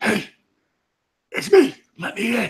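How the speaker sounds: very high, youthful dwarf voice, unhurried and slow. Voicing someone at the door who asks to be let in: young dwarf voice. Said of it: "it sounds like one of the younger dwarves".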